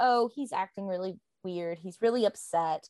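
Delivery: ordinary delivery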